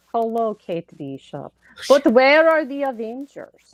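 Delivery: loud, slow, drawn-out fake Russian accent. Urged to try it, delivering a line in a put-on Russian accent. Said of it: "you want me to do it?".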